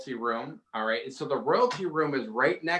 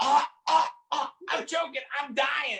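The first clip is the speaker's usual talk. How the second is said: put-on very high, drawn-out wailing child scream; 13 semitones higher than usual. Retelling how the child acted when shut out of the room: imitating a child screaming. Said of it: "and he's screaming this".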